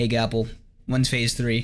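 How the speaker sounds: ordinary talk, nothing marked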